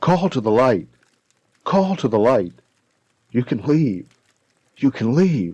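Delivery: mock repeated yelling. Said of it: "I kept yelling".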